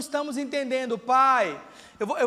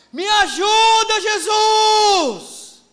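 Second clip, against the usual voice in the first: very loud, high shout, Jesus drawn out; 7 semitones higher, 10 dB louder than usual. Demonstrating how to cry out honestly to god in prayer, shouted. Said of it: "eu dei o grito".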